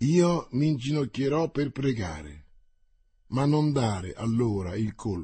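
plain reading voice

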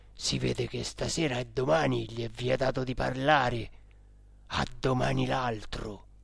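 low, hushed, secretive undertone. The cook speaks after the three fall silent, moved by the solemn appointment, in a low voice. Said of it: "disse a bassa voce".

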